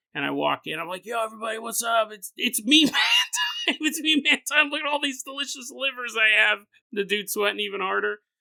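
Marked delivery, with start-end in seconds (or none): 1.1-6.6 put-on loud, high, boisterous, gregarious drunken voice. Speaker acts out walking in drunk, retelling a loud drunk greeting. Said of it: "I'm really loud, gregarious when I'm drunk".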